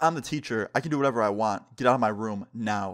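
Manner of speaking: ordinary talk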